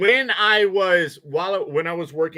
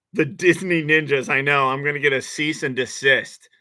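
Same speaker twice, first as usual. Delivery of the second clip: ordinary talk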